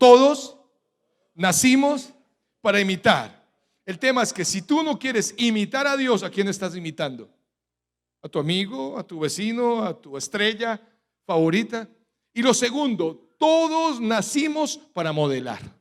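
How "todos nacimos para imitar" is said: loud call-and-response delivery. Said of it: "Repitan conmigo".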